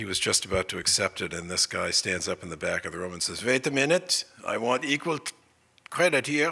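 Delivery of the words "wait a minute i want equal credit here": high-pitched put-on German accent. Retelling a man standing up at the back of the room, in a German accent. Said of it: "[in German accent]".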